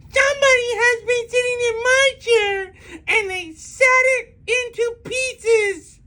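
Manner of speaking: very high, squeaky, tiny little voice. Reading the bear story, Baby Bear scampers to his chair: squeaky little voice. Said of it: "in his squeaky, squealy little voice".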